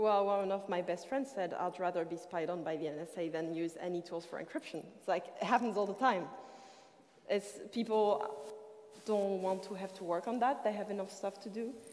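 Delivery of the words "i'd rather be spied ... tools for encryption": plain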